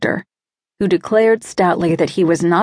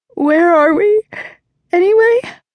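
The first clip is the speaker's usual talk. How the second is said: very high, drowsy voice, mid-yawn; 11 semitones higher, 4 dB louder than usual. Narrator reading a woman just woken from sleep, yawning while asking. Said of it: "Yawning, she asked".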